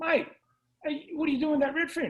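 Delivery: high yell shouted across a long distance. Retelling how a distant fisherman called out: imitating someone yelling from afar. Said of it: "he yelled out to me".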